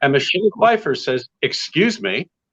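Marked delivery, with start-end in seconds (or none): 1.4-2.3 put-on slight sharpness in the voice. Retelling a rehearsal where a co-star speaks up: Michelle Pfeiffer, imitated sharp tone. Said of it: "she was obviously a little sharp in her voice".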